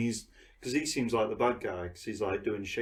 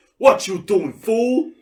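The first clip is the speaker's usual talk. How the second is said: very loud, high-pitched, demanding shout; 12 semitones higher, 16 dB louder than usual. Retelling a movie's post-credit scene, doing a line: Blade impression. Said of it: "That was a good impression".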